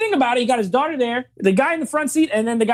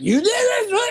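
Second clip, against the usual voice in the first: put-on yelling, higher pitch; 10 semitones higher than usual. Retelling a movie scene where he yells at the girl: imitating someone yelling. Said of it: "he starts yelling at the girl".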